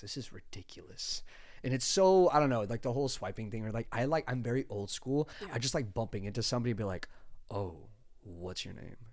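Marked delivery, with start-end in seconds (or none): 7.5-9.0 very soft, quiet, changed put-on voice. Describing meeting someone in person, the speaker asks their name in a put-on voice. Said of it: "Maybe not quite in that voice".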